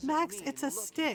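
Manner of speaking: high-pitched talking through laughter. Retelling a rider talking to her scared horse, imitating laughing while talking. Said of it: "she's laughing, going".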